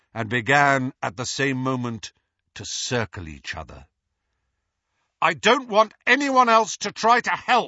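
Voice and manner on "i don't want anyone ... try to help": loud, high, ringing, carrying voice. Harry speaks up in total silence, said loudly. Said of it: "Harry said loudly".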